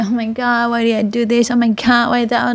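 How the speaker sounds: ordinary delivery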